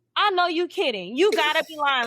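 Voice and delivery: upset, distraught disbelief, pitched high. Retelling how a woman reacted to a staged split, imitating someone distraught. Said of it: "Like she was distraught".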